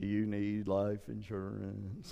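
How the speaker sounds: very low, very soft, sagging, droopy bloodhound voice. Recalling a sponsor ad during a cartoon football broadcast, droopy bloodhound voice. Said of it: "this real droopy, like bloodhound going".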